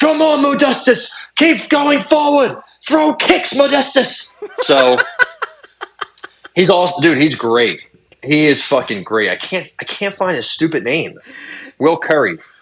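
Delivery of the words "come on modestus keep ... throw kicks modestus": put-on shrill, high screaming coach voice. Act out the UFC fighter's trainer who is always screaming at him, imitating the trainer screaming. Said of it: "He's the one who's always screaming".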